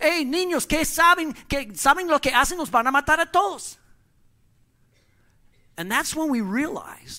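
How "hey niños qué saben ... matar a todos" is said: put-on shouting in Spanish, higher. Retelling how an office manager caught kids with squirt guns: imitating a manager yelling. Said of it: "he started yelling at us".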